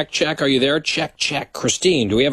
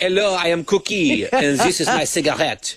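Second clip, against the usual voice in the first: put-on French accent, higher; 4 semitones higher than usual. Teasing another speaker about taking a month off: mock French accent. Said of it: "You're like".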